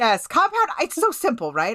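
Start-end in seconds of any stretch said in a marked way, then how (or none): 0.0-0.7 shouting, higher and louder. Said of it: "Amanda's yelling right now".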